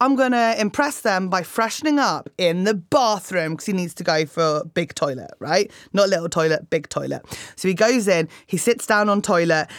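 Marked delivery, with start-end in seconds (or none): none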